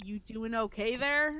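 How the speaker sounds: soft murmur under the breath. Voicing a character quietly checking on a companion: soft, under her breath. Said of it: "kinda softly, under her breath, be like".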